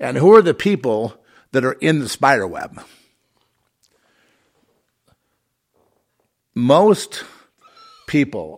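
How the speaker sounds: worked-up, emphatic voice. A speaker mid-talk to listeners, raising voice. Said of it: "I'm raising my voice here".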